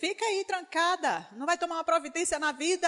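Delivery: nervous, rattled off, high and fast.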